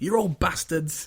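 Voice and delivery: mock loud, defiant shouting. Retelling how Mulder shouts down the new boss: imitating Mulder shouting. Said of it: "Mulder just comes in and just shouts him the fuck down".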